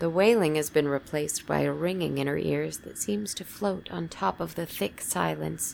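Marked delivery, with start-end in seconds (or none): none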